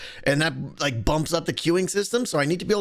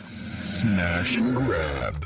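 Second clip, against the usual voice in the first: deep, eerie, creepy ghostly voice; 10 semitones lower than usual. Demonstrating how a card is announced in the game, in a creepy ghostly voice. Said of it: "we went with like a kind of a creepy, ghostly voice".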